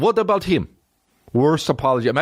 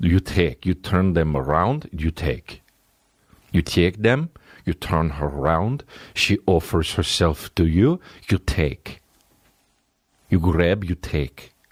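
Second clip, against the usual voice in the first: slow, put-on Russian accent; 7 semitones lower than usual. Comparing an italian guy and a russian guy, doing the russian guy in mock russian accent. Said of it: "the Russian guy's like".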